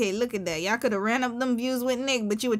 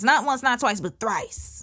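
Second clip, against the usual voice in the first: normal talking voice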